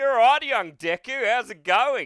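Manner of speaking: put-on Australian accent. Asked for the worst accent for All Might, speaker answers as All Might in heavy Australian accent. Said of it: "Heavy Australian".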